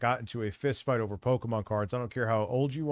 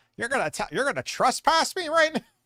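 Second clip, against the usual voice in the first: mocking dorky voice, higher and louder; 13 semitones higher, 5 dB louder than usual. Imitating a man on the video, mocking his voice: imitating the officer's dorky voice. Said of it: "You could tell that guy's a dork by how he's talking".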